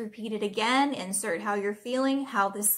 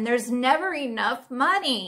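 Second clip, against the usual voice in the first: loud, over-the-top, exaggerated exasperated frustration; 2 semitones higher, 5 dB louder than usual. A speaker models a phrase for listeners to repeat, frustrated, exaggerated. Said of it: "Let's say it again".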